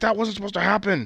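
play-acted very high, ticked-off, pissed-off grumble. Retelling a match, the speaker quotes an upset group member's reaction, mock-angry complaint. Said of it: "Dark Order was all pissed off".

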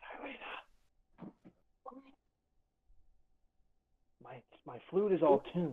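hushed, soft whisper. Leaning over to another character at a bar: whispering in character. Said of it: "I lean over and whisper to Xylena".

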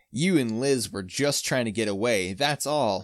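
plain reading voice

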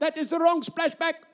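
put-on Bulgarian accent. Retelling the speaker's wife's words at the splashback, Ketty impression, Bulgarian accent. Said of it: "in her little Bulgarian accent".

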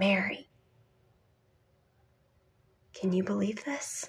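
put-on thrilled, wonder-filled, amazed delight. Retelling what a woman said while sharing her faith, imitating amazed delight. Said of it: "She's saying it in this amazing".

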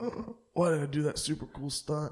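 high, whining, groaning mock stuntman voice.

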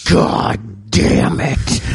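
put-on quiet, creaky, seething angry mutter. Retelling a father refusing gum in a store: imitating a mad, quiet dad. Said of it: "My dad would get so mad and quiet in stores".

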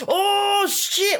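play-acted very high scream at the top of the lungs. Retelling reacting to a game in bed at night: imitating own screaming. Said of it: "top of my lungs, just, like, screaming".

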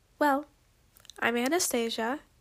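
ordinary delivery, nothing marked

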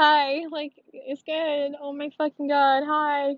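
put-on startled fluster, high and very drawn out. Retelling their startled answer after jumping when she greeted them, retelling being scared. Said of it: "I was like scared half to".

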